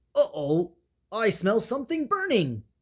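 sudden exclamation in a storybook tone. Elephant speaks up among his animal friends: exclaiming. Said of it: "elephant exclaimed".

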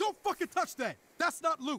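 frantic, high-pitched, sharp angry yell, alarmed. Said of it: "calm down".

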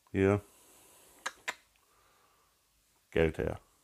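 completely composed, cool, calm and quiet. Describing a threatening person who walks in, said very calmly. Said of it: "ganz mit der Ruhe".

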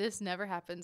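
plain

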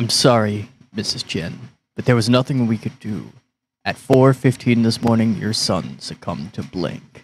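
solemn, sober, grave, serious delivery. Acting out delivering tragic news to a mother, in a serious tone. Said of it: "I'm just trying to sound serious".

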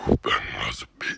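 rough, creaky monster voice, words ground out. Trying out a voice while watching a video with others, in a Venom voice. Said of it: "I'm gonna try and do a venom voice".

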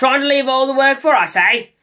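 shrill, very loud, high-pitched accusing, demanding tone. Confronting a companion who has just returned, demanding. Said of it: "Demanded Arry".

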